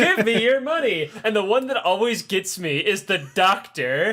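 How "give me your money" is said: mock animatronic businessman voice, higher pitch. Retelling a show scene, imitating a looping animatronic businessman. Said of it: "shitty little animatronics, like, looping things".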